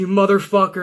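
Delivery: ordinary delivery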